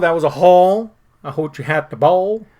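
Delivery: put-on old man voice.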